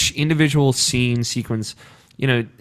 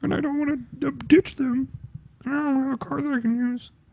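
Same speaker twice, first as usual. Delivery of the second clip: put-on, very high cartoon frog puppet voice; 13 semitones higher, 6 dB quieter than usual. Imitating a friend who never visits, in a Kermit the Frog voice. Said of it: "and he sounds like Kermit the Frog".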